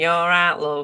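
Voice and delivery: put-on Yorkshire accent. Talking about living in Leeds, the speakers try out a Yorkshire accent. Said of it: "Is that your Yorkshire accent?".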